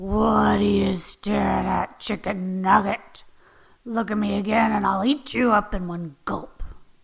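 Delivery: low, angry growl like a pit bull. An angry pit bull in the next pen threatens the narrator, growling pit bull. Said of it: "he growled".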